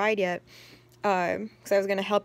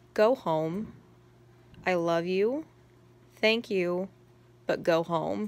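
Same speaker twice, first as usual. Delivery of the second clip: mock affectionate yet assertive, firm tone. Retelling what the Starbucks lady told the speaker, imitating a loving, assertive voice. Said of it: "loving and assertive voice".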